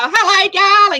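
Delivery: big high voice. Imitating a fashion designer's voice she remembers: imitating Jeannie Little's voice. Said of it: "You still loved hearing Jeannie go".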